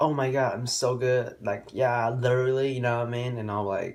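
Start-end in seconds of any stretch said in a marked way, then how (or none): 0.0-2.7 slow, boastful, smug, full-of-herself bragging. Retelling how a cheerleader brags about herself: imitating Nicole bragging. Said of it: "Nicole started putting herself out there".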